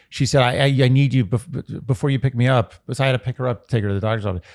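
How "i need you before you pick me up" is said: mock-distressed, acted-out voice. A speaker retelling an anxious call from their mother before a doctor's appointment, to a listener. imitating a distressed mother. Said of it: "the real distress in her voice".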